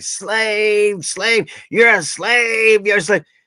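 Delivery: repeated yelling with the word "slave" drawn out. Retelling a man yelling at someone reading on break: imitating someone yelling. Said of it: "he's yelling at this guy".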